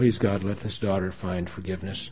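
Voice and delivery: ordinary delivery, nothing marked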